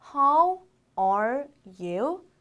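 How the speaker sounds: very slow, word-by-word reading. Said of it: "하나씩 읽어볼게요".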